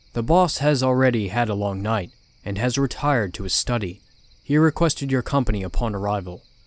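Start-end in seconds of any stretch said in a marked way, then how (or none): none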